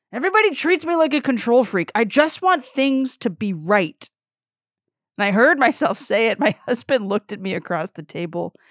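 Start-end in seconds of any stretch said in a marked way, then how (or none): 0.2-4.1 high, furious, enraged outburst. Retelling what they said at home in a fit of rage, acting out the rage. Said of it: "in a fit of rage".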